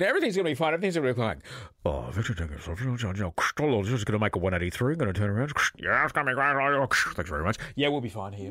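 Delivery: airline pilot voice in in-flight cockpit announcement manner. Speaker recreates Jimmy's in-flight announcements, doing Jimmy's pilot voice. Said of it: "I loved his pilot voice".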